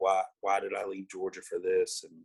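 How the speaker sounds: acted-out mock yell, screaming. Retelling the days of yelling at god over leaving georgia, retelling yelling at god. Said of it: "I'm just screaming at him, yelling all day".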